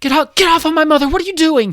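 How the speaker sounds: very high, very loud furious shrieking scream. Voicing a woman running at a player character: screaming in character. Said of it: "she's running at you screaming".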